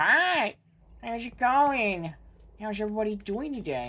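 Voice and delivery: casual fish-creature voice. Voicing a giant fish staring at the player: voicing the giant death fish. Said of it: "Look at that giant death fish that's just staring at me. It's like".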